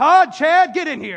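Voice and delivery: very loud, booming, high-pitched, drawn-out yell. Retelling how the dad called the brothers in: imitating dad yelling. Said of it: "my dad yells".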